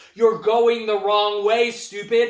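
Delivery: very loud booming yell. Retelling a driver yelling at oncoming cars: imitating Paul yelling. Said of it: "Paul is yelling at the drivers".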